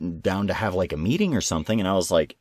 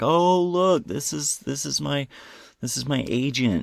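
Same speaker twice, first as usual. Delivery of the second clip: high-pitched, mock drunk-sounding ramble; 7 semitones higher than usual. Retelling what a blood-covered person said to the speaker: imitating someone talking drunk. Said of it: "She's talking kinda like, kinda like she's drunk".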